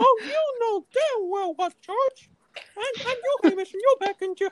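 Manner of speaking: very high-pitched, squeaky cartoon voice. Answering someone who asks Mickey what he is doing, in a Mickey Mouse voice. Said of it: "Mickey, what are you doing?".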